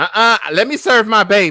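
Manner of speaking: very loud, shrill, high-pitched woman's holler. Speaker retells how a woman embarrassed them whenever they went up: imitating a loud woman. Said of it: "and she was loud".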